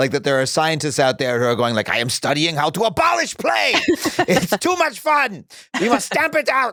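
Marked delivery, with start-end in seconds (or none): 1.9-6.7 put-on German scientist accent, high, slow, drawn out. Speaker voices imagined scientists while talking with another speaker: german accent. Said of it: "I'm sorry to do a German accent".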